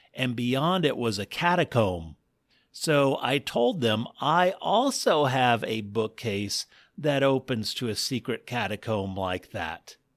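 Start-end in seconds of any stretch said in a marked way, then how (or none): none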